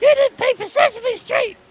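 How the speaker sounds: put-on very high, shrill, very loud, blaring kids' monster voice. Speaker imagines a debt collector at his front door, Elmo voice. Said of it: "I'll have Elmo knocking on my front door".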